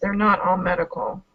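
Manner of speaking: discreet, confiding, private aside. Pulling Ben aside in character to warn him: very quiet voice. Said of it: "or Twist does in a very quiet voice".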